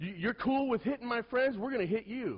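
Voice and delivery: high, loud, angry, threatening voice. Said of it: "He goes".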